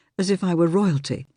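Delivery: ordinary delivery, nothing marked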